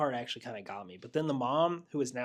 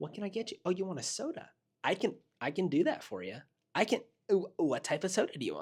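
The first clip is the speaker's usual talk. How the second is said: put-on, pitched-up, helpful customer-service voice; 6 semitones higher than usual. Mocking how her assistant talks when fetching things: mocking his customer-service voice. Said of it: "it's his customer service voice".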